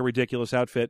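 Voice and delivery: normal talking voice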